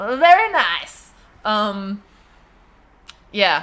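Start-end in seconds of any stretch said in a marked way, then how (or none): 0.0-1.1 put-on accent from Eastern Europe. Trying to do Dad's accent, it comes out as a Borat accent. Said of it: "I give everyone a Borat accent. It's the only accent I can do".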